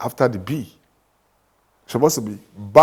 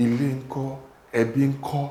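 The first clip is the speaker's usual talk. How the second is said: ordinary talk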